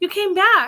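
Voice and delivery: thrilled and excited. Retelling Locke greeting Henry's return: imitating excited Locke. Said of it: "when he's all excited".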